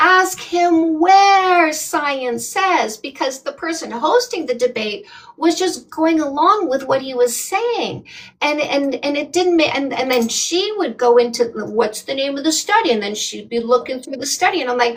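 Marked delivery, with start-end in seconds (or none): 0.0-3.0 mock, very slow, stretched-out, pitched-up scream. Retelling watching TikTok debates, re-enacting own screaming at the phone. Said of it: "I'm screaming at my phone".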